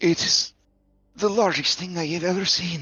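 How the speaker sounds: hushed, whispering voice. Voicing a frightened crew member telling the queen about a creature: whispering. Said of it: "she whispers to you".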